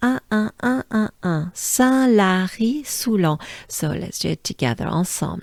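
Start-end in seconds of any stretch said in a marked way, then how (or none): 1.5-3.4 careful French accent and pronunciation. Showing learners how to say a town name: French pronunciation. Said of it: "Let me say it once".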